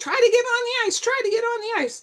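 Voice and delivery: very high-pitched shouting. Retelling what the pilot called out after the crash: imitating someone shouting. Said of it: "the pilot was shouting".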